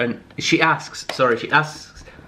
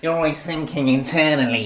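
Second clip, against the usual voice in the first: tiny, little creature-like put-on voice. Mimicking the other speaker's repeated complaint: little hobbit voice. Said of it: "like a little hobbit".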